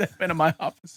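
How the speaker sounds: laughing mock tone.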